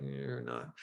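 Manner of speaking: mumbled speech.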